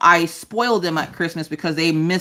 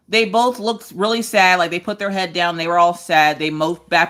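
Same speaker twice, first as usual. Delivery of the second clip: usual speaking voice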